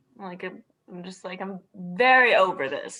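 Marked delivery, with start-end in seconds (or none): 1.4-3.0 very loud, drawn-out, bored and fed-up voice. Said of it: "roll my eyes. Like, I'm just like".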